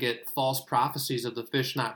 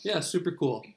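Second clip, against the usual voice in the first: heavy, pitched-up sarcasm laid on thick; 6 semitones higher than usual. Answering a remark that couples jobs are kinda cool: sarcastic tone. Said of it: "so, so sarcastic".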